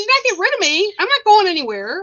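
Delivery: excited, fast, insistent talk, high and swooping. Acting out what the sister keeps yelling, imitating excited fast talk. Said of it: "And she's really like excited".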